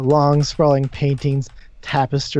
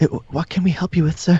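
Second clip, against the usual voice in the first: very flustered, rattled voice, higher pitch; 3 semitones higher than usual. Storyteller voicing staff running out to a visiting sir, very flustered. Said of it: "just very flustered".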